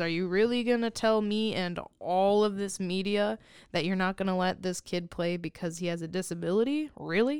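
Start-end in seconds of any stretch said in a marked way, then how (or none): none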